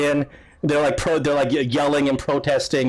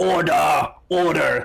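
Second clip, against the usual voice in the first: put-on gruff grizzled old dwarf voice, louder. An old judge opens a court session, calling the room to order. grizzled old dwarf judge. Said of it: "this old grizzled dwarf".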